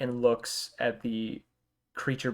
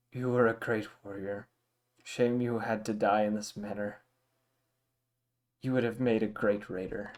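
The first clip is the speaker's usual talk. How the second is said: somewhat disappointed, mildly let-down tone. Voicing a character speaking to a dying player character, somewhat disappointed. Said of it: "he says in a voice somewhat in disappointment".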